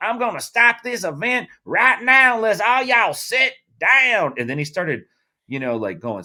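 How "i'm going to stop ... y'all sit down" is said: put-on thick, heavy country accent, pitched very high. Retelling how a man on the mic threatened to stop an event, heavy country accent. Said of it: "He's got a heavy country accent too".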